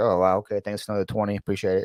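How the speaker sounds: put-on bored, flat, unexcited tone. Retelling how a streamer thanks viewers for gifted subs: imitating an unexcited thank-you. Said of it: "there's no, like, excitement in the guy's voice".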